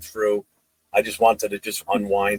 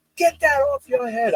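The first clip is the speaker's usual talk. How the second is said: mock yell, higher. Retelling a coach scolding over a Raiders hat: imitating a coach yelling. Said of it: "he starts yelling at me".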